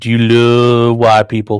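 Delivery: loud, probing tone, "love" stretched out. Asking a chat question the way Jesse Lee Peterson would. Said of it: "Jesse Lee Peterson style".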